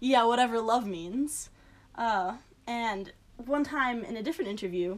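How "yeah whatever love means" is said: mock-scoffing tone. Recounting a husband's interview answer about love, imitating a scoffing reply. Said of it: "he laughed, he scoffed".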